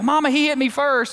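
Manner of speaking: high-pitched yelling in a mock child voice. Describing two boys playing in the living room, the speaker imitates one yelling back to mama. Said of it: "the other one yells back".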